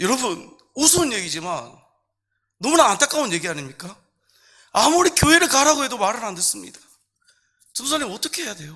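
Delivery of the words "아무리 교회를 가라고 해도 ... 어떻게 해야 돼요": mock crying, high, tearful pleading voice. Retelling how a mother came to the speaker, imitating a crying mother. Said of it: "막 울면서 저한테 얘기를 하시는 거예요".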